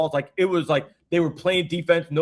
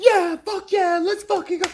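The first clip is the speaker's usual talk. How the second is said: mock very high, pumped-up, hyped cheer; 14 semitones higher than usual. Retelling how fans cheer at American sports: imitating an American sports cheer. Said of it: "we're like".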